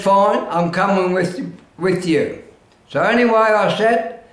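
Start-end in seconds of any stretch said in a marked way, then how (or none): none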